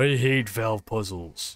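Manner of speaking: deep, low character voice. Working through a valve puzzle in a game, the speaker talks in a Duke Nukem voice. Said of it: "I love your Duke Nukem voice".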